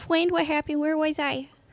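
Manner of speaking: tiny, high little puppy creature voice. The little dude Ulrich sent wakes up asking what happened, little puppy voice. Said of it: "The little puppy voice".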